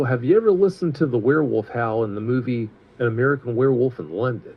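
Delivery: ordinary talk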